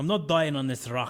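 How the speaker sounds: put-on poor, shaky Scottish accent drifting into Irish. Retelling a movie scene, doing a horrible Sean Connery impression. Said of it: "That's a horrible Sean Connery".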